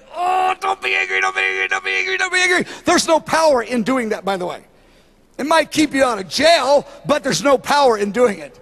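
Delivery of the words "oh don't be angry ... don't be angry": mock gritted-teeth muttering, pitched higher. Acting out holding back anger: imitating speaking through gritted teeth. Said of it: "instead of gritting my teeth and going".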